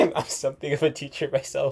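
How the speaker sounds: line spoken while laughing.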